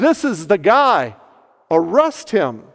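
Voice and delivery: ordinary talk, nothing marked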